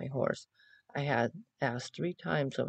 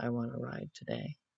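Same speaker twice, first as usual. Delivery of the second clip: mock tearful words pushed out through crying; 5 dB quieter than usual. Retelling coming back into the house: imitating crying while speaking. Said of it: "crying and apologizing to my husband".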